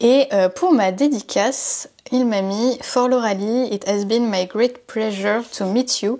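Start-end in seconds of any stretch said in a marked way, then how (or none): 2.8-6.2 slow English with a heavy French accent. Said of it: "avec mon super accent".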